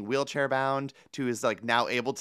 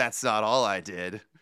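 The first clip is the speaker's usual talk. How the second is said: mock sassy tone, lower; 4 semitones lower than usual. Retelling a movie character's line: imitating a sassy quip. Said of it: "this sassy quip".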